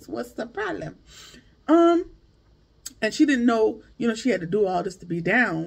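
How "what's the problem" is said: put-on voice of a woman. Retelling a talk about wanting the main stage: Jocelyn Hernandez voice. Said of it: "In my Jocelyn Hernandez voice".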